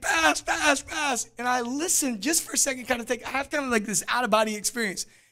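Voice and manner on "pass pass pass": mock shouting, higher pitched and slower. Speaker recalls yelling for a surrounded player to pass, retelling a yell. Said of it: "I'm yelling it as loud as I can".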